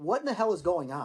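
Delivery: ordinary delivery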